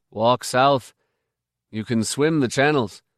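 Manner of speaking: ordinary delivery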